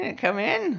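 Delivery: put-on very high, hag-like old crone voice. The game master voices a shopkeeper inviting a player into her store, old crone voice. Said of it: "She looks like a crone".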